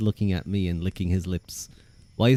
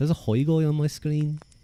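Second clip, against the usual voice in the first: slight Liverpool accent; 7 semitones higher than usual. Repeating a phrase while playing with accents, in a slight Liverpool accent. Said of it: "getting into a little bit of a Liverpool accent".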